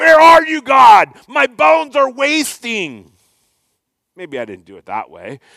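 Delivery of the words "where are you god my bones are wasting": angry drawn-out cry, very high and very loud. Describing kinds of prayers, acting out a mock-angry prayer. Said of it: "Not the angry kind of prayers like".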